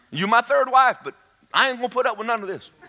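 high, laughing, defiant mocking squeal. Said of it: "You go".

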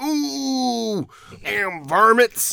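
put-on old prospector voice. Describing a movie's stock character, imitating an old crusty prospector. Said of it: "old crusty prospector".

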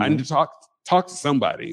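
ordinary talk, nothing marked

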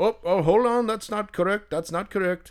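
heavy put-on Irish brogue. Retelling what the self-checkout monitor said: imitating a thick irish accent. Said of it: "He's got this thick Irish accent".

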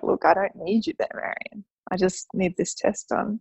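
normal talking voice

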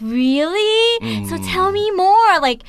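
very slow, excited, high, drawn-out really. Retelling how they talk to the kids: imitating own excited tone. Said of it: "I feel like with my tone, like, I'm in-, like, excited".

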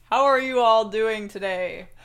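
very loud, large, full, booming voice. Playing a guest on a show, greeting the hosts: George Foreman voice. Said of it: "you sound very different from what I've heard of you".

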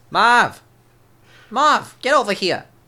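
very high, loud, drawn-out call. Calling out to Marv of the Wet Bandits: Joe Pesci impression. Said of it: "That was a good Joe Pesci".

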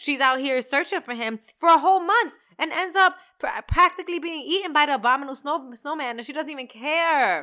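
fast, high-pitched ranting. Addressing viewers about a holiday film, the speaker is ranting, talking fast. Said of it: "I'm talking so fast".

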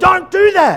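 high, loud yelling. Recounting Mel shouting across an indoor kids' soccer game, imitating Mel yelling. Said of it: "She starts yelling across Major League".

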